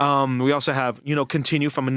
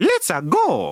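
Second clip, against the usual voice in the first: high-pitched video-game hero voice; 7 semitones higher, 3 dB louder than usual. Showing how the Mario voice sounds: Mario voice. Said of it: "learn how to sound like that guy".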